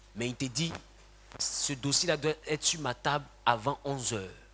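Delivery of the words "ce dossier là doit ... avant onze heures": normal talking voice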